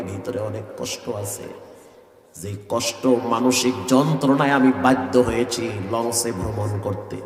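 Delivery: sorrowful, hushed, very low, soft grieving voice.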